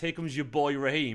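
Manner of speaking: slow, sarcastic mocking voice. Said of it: "That's a sarky comment".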